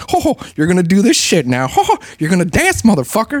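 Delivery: mafia gangster voice, high with swooping pitch. Describing how South Park portrays Mickey Mouse, doing a mafia gangster voice. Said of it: "he's just like a fucking mafia gangster".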